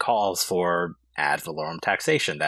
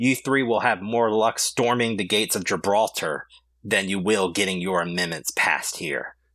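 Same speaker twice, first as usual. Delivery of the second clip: mock heated, exasperated, furious outburst. Retelling a frustrated man getting up to shout at three people, imitating a furious yell. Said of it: "he gets up and he just yells out".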